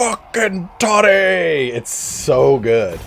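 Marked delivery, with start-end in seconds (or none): 0.0-1.7 shrill, rowdy, very high and loud yell. Retelling a funny stream moment, imitating Boris Toddbringer yelling. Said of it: "And he just yells".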